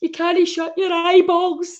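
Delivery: frightened, high-pitched voice. Retelling what the speaker's cousin said, imitating her scared voice. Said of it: "like pure scared voice".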